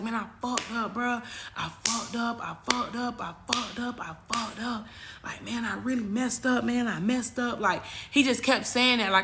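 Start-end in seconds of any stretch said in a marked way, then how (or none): 0.0-7.6 mock blubbering, repeated sobbing, snot-nosed bawling. Retelling a TikTok video of a crying man: imitating someone bawling. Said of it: "he was bawling".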